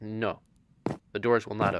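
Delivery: ordinary delivery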